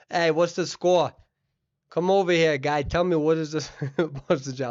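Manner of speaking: Boston-area accent. Looking up an overall score, playing up a Rhode Island and Boston accent. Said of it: "it's my Rhode Island and Boston accent right there".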